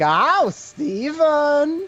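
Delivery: put-on New Jersey accent. Asked about his Jersey accent, show how his mother sounds, imitating Steven's mother, Jersey accent. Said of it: "She's like".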